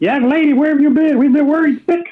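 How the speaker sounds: very high-pitched angry scolding. Stomping over to grab the young lady's shoulders, scolding in a high-pitched angry voice. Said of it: "a high-pitched voice when I'm angry".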